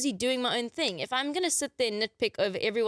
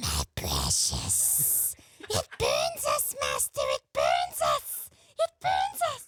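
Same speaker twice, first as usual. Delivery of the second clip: very low, goblin-like cave creature voice. Showing off impressions to friends, doing a Smeagol impression. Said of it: "so this is my Smeagol".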